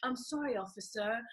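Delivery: put-on smooth British accent. Retelling how a friend answered a police officer: imitating Botti's British accent. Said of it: "He started speaking with his British accent".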